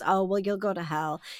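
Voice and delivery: very quiet, low, dry deadpan. Retelling an actress's line from a story in which the Pope is coming, imitating a deadpan delivery. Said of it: "deadpan, Whoopi Goldberg goes".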